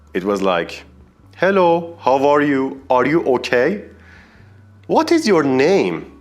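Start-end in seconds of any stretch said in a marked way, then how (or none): 1.3-5.9 put-on awful, thick Persian-accented English. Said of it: "I had a kind of Persian English accent".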